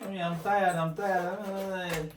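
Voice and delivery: put-on very slow, high, tired, stretched child crying. Retelling what a child said to the mom: imitating a crying child. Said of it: "the child was crying".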